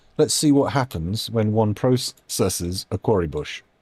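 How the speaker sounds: ordinary talk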